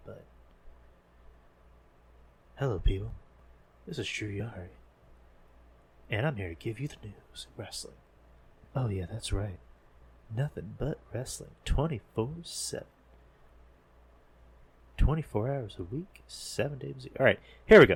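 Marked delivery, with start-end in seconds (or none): 0.1-17.2 breathy, soft, whispered ASMR voice. Opening a wrestling news segment in a mock ASMR voice: ASMR-style soft voice. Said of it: "it sounds like I'm doing an A S M R video".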